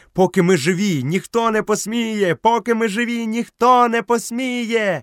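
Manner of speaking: wild, frenzied, very high frantic shouting. Narrator reads Grey Brother and the other three answering Mowgli, shouting frantically. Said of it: "несамовито закричали".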